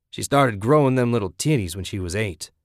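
ordinary talk

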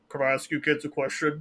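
fake villainous robot voice. Retelling how Megatron at Universal Studios spoke to three kids, Megatron voice. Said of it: "this Megatron voice says".

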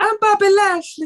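very high-pitched, gentle voice. Discussing his voice, the speaker does a high-pitched Bobby Lashley impression. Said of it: "He's got quite a high pitched voice".

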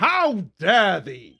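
high, loud, over-the-top theatrical scream. Retelling yelling at a lover, too theatrical: theatrical scream. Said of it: "sometimes I just scream".

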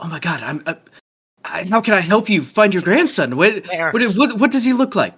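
frantically keen, desperately eager, tripping over words, pitch rising. Voicing a woman who desperately wants to help find a grandson: desperately eager to help. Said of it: "she wants to help so desperately".

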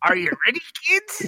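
very high pirate captain voice, called out. Repeating the cartoon's opening line: SpongeBob pirate voice. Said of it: "you sounded just like the pirate from SpongeBob".

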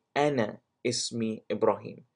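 ordinary talk

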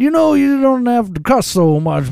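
very high-pitched comedian-style voice. Retelling a phone call where a comedian gives advice: Bill Cosby impression. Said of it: "my best Bill Cosby impression".

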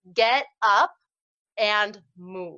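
loud, measured voice. Speaker urging listeners to get up and move, in a raised voice. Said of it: "You heard me raise my voice".

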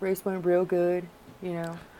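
dead-level, flat, soft super-monotone drone. Discussing NASCAR drivers, the speaker imitates a post-race answer, mock super-monotone driver. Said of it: "dudes who are like super monotone".

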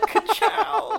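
very high, loud, showy belted-out delivery. Joking about a variant who is Lightning McQueen: Lightning McQueen catchphrase. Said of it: "he's freaking Lightning McQueen".

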